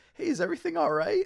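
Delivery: very high, fast, squeaky voice.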